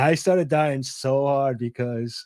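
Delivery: ordinary delivery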